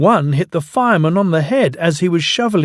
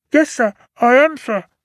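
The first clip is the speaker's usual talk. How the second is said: smothered, muffled, pitched-up voice, as if covered; 8 semitones higher than usual. The narrator reads the reply to the fat controller's shout, in a muffled voice. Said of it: "a muffled voice replied".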